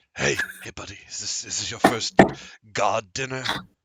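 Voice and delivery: hushed whisper. Voicing a seated dinner guest who turns toward Ignis, whispering. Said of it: "and he whispers".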